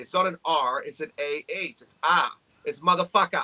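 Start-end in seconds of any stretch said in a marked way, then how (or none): 1.8-3.4 put-on New England accent, faster. Explaining how the accent drops the r, speaker demonstrates a new england accent. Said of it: "in my best New England accent".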